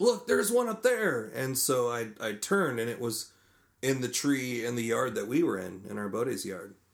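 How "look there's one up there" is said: mock, shrill, very high raised shout. Telling a story about shooting at crows, the speaker retells what someone yelled. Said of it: "Rick yelled at me like".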